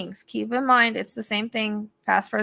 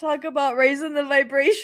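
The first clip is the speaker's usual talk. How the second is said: high-pitched, giggling, laughing through the words; 5 semitones higher than usual. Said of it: "I'm trying to stop".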